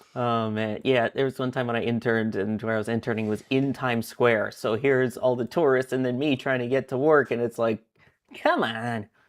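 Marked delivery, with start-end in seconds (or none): 8.3-9.0 put-on New York accent coming back, slipping out. Recalling pushing past Times Square tourists to get to work: New York accent. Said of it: "my New York accent is coming back out".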